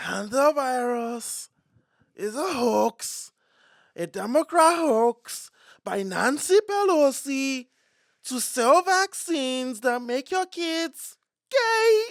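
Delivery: put-on very high-pitched, very loud Nigerian accent. Speaker shows how his impressions come out accented, doing Trump with a Nigerian accent. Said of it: "this was Trump if he was from Nigeria".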